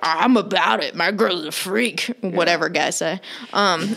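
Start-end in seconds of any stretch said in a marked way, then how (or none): 0.0-2.1 laid-back, relaxed dude voice. Advising a listener, imitating how a guy like her boyfriend would react: impression of a guy. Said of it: "That's my impression of a guy".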